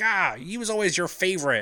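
mock angry, high, pissed-off accusing jab. Retelling a movie scene where an angry character accuses: imitating a pissed-off character. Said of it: "he's pissed off".

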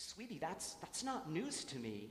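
ordinary talk

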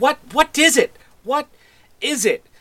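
irritated voice. Narrating a game, voicing someone calling out after a door opens: annoyed voice. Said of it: "sort of an annoyed voice in the distance go".

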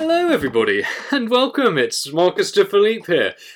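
jolly, cheerful tone. Welcoming everybody and introducing yourself while in a happy mood, in a rather jovial tone. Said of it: "in the tone of my voice that I'm rather jovial".

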